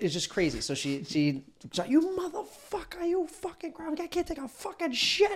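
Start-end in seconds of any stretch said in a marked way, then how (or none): 1.9-5.4 put-on woman's scream, higher pitched. Retelling how an old lady opened the door: imitating a woman screaming. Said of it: "She starts going crazy".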